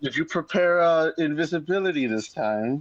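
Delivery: mocking, needling sarcasm. Asking another player's character whether they prepared invisibility: sarcastic. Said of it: "I'm gonna say this sarcastically".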